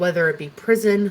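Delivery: ordinary delivery, nothing marked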